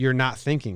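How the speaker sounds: ordinary talk, nothing marked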